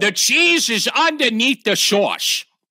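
put-on Chicago accent, pitched a bit high. Talking about sounding like a Chicagoan, showing off a put-on Chicago accent. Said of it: "Why are you so good at that?".

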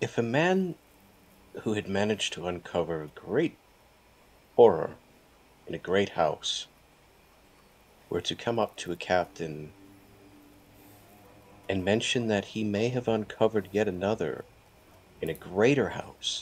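quiet, low-volume, leaned-in murmur. A roleplayer's character leans in toward a captain, in a quiet voice. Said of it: "I kind of lean in, like, quietly".

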